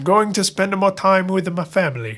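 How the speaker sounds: terrible, hammy put-on Italian accent. As a Pope being forced to resign, speak in a terrible Italian accent. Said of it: "in my terrible Italian accent".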